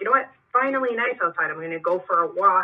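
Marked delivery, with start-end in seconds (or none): none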